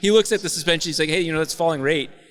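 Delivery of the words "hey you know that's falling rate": plain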